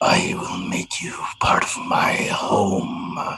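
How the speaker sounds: low, deep, rumbling whispered voice. Narrator voices a growing thing as it speaks, in a deep rumbling voice. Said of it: "you hear another deep, rumbling voice".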